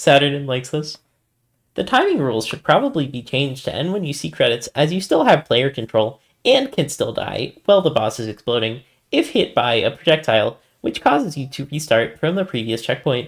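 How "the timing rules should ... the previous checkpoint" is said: put-on nerdy know-it-all voice, swooping and sing-song. Reading a forum post aloud in a mocking nerd voice. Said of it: "I am gonna use the nerd voice".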